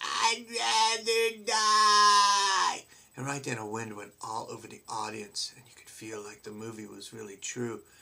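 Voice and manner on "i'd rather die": very high, very loud, shrill shriek. Retelling a moviegoer behind the speaker: imitating someone screaming. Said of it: "she's like screaming".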